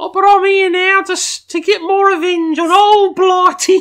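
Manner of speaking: put-on very high, loud voice with British accent. Voicing the wet wipe monster in a British voice: Tom Holland British voice. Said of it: "I was thinking more Tom Holland British".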